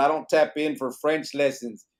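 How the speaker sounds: ordinary talk, nothing marked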